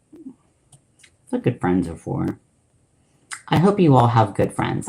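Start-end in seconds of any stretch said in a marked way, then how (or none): 3.5-4.9 sincere tone that sounds unintentionally sarcastic. Wishing the listeners good friends: accidentally sarcastic-sounding. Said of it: "that sounded super sarcastic".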